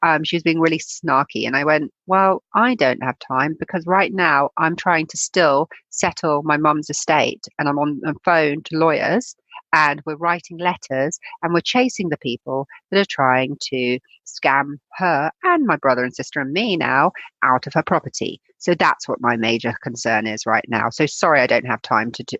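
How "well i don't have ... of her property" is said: ordinary talk, nothing marked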